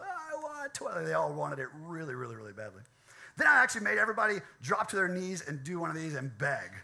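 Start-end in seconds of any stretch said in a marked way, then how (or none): 0.0-1.0 very high, anguished, agonized yell. Retelling the students shouting again with more force: imitating an agonized shout. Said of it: "the proper amount of gusto, kind of, like, agony, volume".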